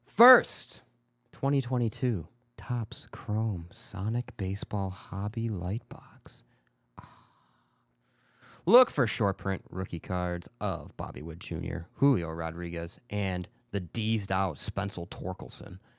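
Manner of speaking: seductive, sexy delivery. Reading out details of a new trading card release on a show, seductive reading. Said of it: "You sounded really seductive when you were trying to read that".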